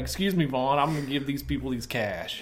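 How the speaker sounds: plain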